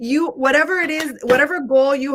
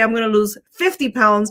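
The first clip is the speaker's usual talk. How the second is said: ordinary talk, nothing marked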